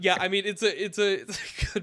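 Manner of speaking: words broken up by laughing. Trying to talk about a drafted team, laughing while talking. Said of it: "I can't stop laughing".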